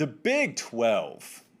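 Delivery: very slow, drawn-out, stretched-out words. Turning to a new topic with Colin, said very slowly. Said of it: "Said that very slowly".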